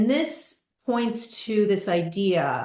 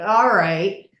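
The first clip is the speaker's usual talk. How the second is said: weary, resigned, slightly raised giving-in reply; 6 dB louder than usual. Retelling the yoga teacher's reply to a proposed experiment: imitating a resigned reply. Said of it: "this sort of resigned statement".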